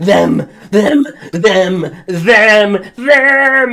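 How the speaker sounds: terrified shouting. Acting out a panicked character who grabs someone and yells the same word repeatedly, shouting in terror. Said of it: "his eyes are just wide in shock and terror".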